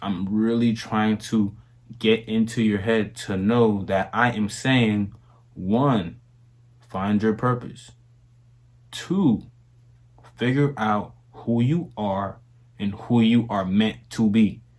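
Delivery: very slow, deliberate and low-toned delivery. Speaking to viewers in a video, in a very slow, low tone. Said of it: "I'm really saying it very slow, low tone".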